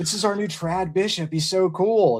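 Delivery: put-on lisping voice. Retelling what someone said online, imitating Hicks with a lisp. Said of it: "it's Hicks with his lisp".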